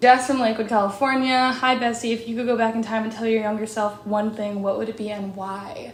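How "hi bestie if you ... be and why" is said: ordinary talk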